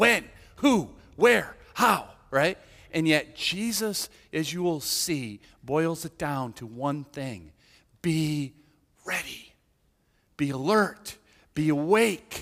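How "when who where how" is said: high, loud, all-worked-up burst. A speaker imitating Jesus's disciples getting worked up about the end times, mock worked-up questioning. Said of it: "get all worked up just like his disciples".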